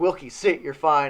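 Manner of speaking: loud, play-acted yell. Retelling how someone on the sideline yelled at an injured player: imitating someone yelling. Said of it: "sitting there yelling at me".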